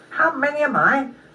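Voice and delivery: high, taunting, mocking squirrel voice. Reading a story aloud, the narrator voices the squirrel's reply in a mocking voice. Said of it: "said the squirrel in a mocking voice".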